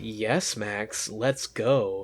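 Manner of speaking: low, very slow evil voice, every word drawn out. Retelling what an evil double says to Max: imitating evil Mirror Noah. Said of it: "he's so obviously evil now".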